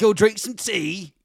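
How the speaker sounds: high, loud mock Cockney accent. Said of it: "like, a Cockney accent".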